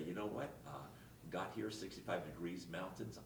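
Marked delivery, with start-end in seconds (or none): none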